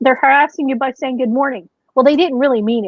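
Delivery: ordinary delivery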